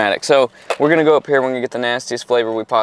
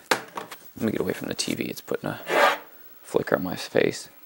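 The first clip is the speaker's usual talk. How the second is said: soft, breathy, hushed whisper; 11 semitones lower, 9 dB quieter than usual. Planning a prank and stepping away from the tv, talking quietly. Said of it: "I'm talking quietly because".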